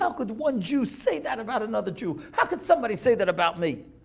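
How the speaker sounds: put-on, tearful, crying lament through tears. Retelling a man's words after he ran home crying, imitating someone crying. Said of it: "He couldn't stop crying".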